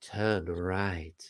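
seductive, very low, soft woman's voice. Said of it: "there's a sexy woman on there".

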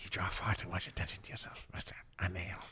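real breathy, near-whispered voice. Quoting a mysterious movie character's lines: imitating a breathy voice. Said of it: "He's got that real breathy voice".

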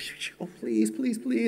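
acted, breathy whispered pleading with hushing first. Retelling a friend on the phone during golf: imitating someone begging.

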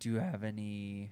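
voice cracking. Host starts a question to the guest near the end of the show: voice cracking. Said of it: "voice crack. That was horrible".

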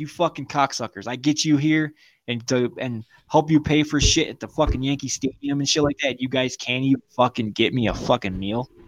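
play-acted furious, angry ranting. Retelling what he said to the guys who ordered food without him, retelling an angry rant. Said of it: "I'm pissed. Like, fucking pissed".

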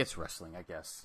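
low, soft, resigned, shrugging tone. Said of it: "I'm like".

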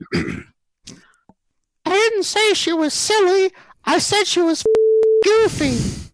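very high, squeaky put-on cartoon voice. Telling a divorce-court joke, delivering the punchline in a Mickey Mouse voice. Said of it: "you have to do a Mickey Mouse voice".

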